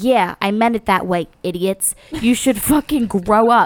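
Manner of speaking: put-on Jersey accent. Reading out what a man said to a booing crowd, in a South Jersey accent. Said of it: "your South Jersey accent in that reading".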